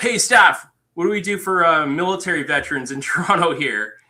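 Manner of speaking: loud, high-pitched shouting. Retelling calling out a question to a staff sergeant: retelling own yell. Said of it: "I just yelled".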